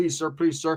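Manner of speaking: put-on pleading tone. Retelling trying to talk an old man out of it: retelling own pleading. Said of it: "So I'm trying to talk him into it".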